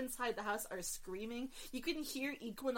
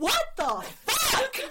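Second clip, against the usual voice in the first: shrill, full-throated, very high, loud scream; 13 semitones higher, 14 dB louder than usual. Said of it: "And Pitch Voyage screams".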